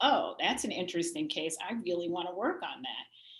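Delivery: plain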